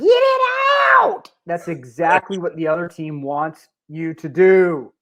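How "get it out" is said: very high, shrill, put-on Southern drawl yell. Imitating a parent yelling from the sideline: imitating a parent yelling in Southern drawl. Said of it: "in that Southern drawl".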